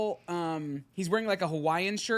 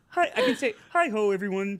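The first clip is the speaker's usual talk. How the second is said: put-on frog puppet voice; 3 semitones higher, 5 dB louder than usual. Discussing a frog puppet's voice, a speaker tries their best impression of it. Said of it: "Like that's the best that I can do".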